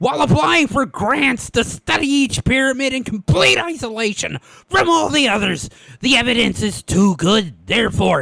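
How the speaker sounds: cartoon duck-style character voice. Perform a quote for the others after naming your model, doing a Wallace Shawn impression. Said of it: "I'm essentially doing an impression of".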